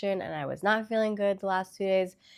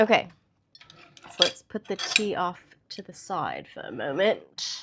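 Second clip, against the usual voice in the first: unpolished, sing-song put-on British accent; 3 dB louder than usual. Speaker talking to viewers, slipping into an accent: put-on British accent. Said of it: "I'm getting into this British accent".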